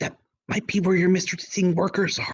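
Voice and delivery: whispering. In the game, the player's character answers the man warning about the tunnels, whispered. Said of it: "And I whispered to him".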